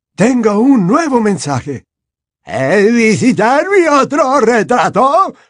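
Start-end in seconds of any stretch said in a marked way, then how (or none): 2.5-5.3 high, flute-like voice. Narrator reading Phineas's reply to Dumbledore, high fluty voice. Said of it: "Repitió Phineas con voz aflautada".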